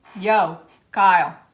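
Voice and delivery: put-on New Jersey accent. Trying an accent after being told it is needed: put-on Jersey accent. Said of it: "You need that Jersey accent".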